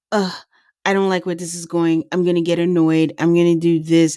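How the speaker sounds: normal talking voice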